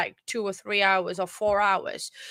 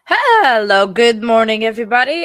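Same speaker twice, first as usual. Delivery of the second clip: hoarse, raspy voice, louder; 12 dB louder than usual. Greeting everybody at the start, voice worn after a concert: hoarse voice. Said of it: "I'm still very hoarse".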